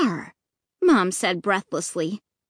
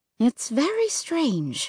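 hushed, gentle, soft and quiet voice; 4 semitones higher, 4 dB quieter than usual. Narrator voices Mom taking Dad's arm at the locked office: said softly. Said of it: "she said softly".

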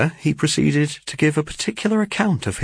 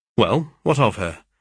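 plain reading voice

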